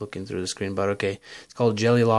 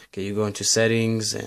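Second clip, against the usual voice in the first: usual speaking voice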